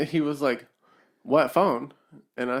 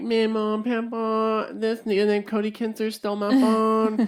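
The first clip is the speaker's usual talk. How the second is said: mock high bawling wail, drawn-out "papa"; 8 semitones higher than usual. Retelling telling family the phone was stolen: imitating own bawling. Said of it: "I started bawling my eyes out".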